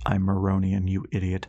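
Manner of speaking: ordinary delivery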